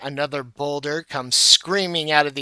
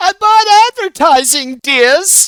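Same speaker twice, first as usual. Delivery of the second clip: shrill yell, very high and very loud; 11 dB louder than usual. Voicing Myrtle standing up in a game scene: yelling as Myrtle. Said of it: "Myrtle stands up and yells".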